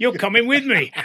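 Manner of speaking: very loud, high, put-on cockney accent. Quoting a man telling him about the test flight; imitating a Cockney accent. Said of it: "and he was a Cockney".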